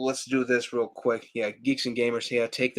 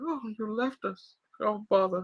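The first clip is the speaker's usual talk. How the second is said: put-on cartoon bear voice, higher and quieter; 10 semitones higher, 6 dB quieter than usual. Showing how the movie's Pooh could have spoken: Winnie the Pooh voice. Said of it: "sound like Winnie the Pooh".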